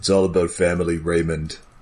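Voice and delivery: put-on low, extra deep growling voice. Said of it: "you're doing an Iron Giant impression".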